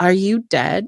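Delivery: put-on childlike little voice like a small kid. Retelling a woman's question to a lieutenant: imitating a childlike voice. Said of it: "like a kid would".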